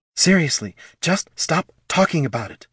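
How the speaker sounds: hissed through clenched teeth. Narrator reading Laruna's line after Thane thanks the kobold: hissed through teeth. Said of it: "Laruna hissed through her teeth".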